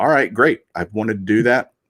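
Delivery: plain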